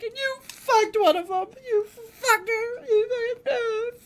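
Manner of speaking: frantic freak-out in a very high voice. Retelling how she reacted after learning they hooked up: imitating someone freaking out. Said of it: "freaking out".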